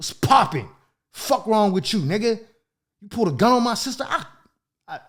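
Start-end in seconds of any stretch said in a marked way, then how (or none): 0.0-4.0 menacing, murderous, threatening, pitched-up voice. Retelling confronting a man who pulled a gun: imitating own threatening talk. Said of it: "I'm talking that murder to him".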